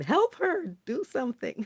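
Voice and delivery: put-on, all-out screaming yell. Retelling a scene from a show: imitating Tara screaming. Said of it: "'cause Tara was screaming".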